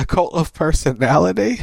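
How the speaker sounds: put-on nervous, anxious voice. Retelling a backstage moment, the speaker does a nervous Paul Heyman impression. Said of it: "Paul Heyman nervously goes".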